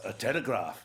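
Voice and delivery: speaking in a put-on German accent. Retelling a film take, the guy who comes in answers with a German accent. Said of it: "he's got a German accent all of a sudden too".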